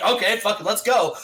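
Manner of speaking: normal talking voice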